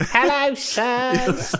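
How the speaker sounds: put-on very high-pitched, creepy little-girl voice. Playing a character just cast as a creepy small girl: creepy small girl voice. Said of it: "Add a small girl".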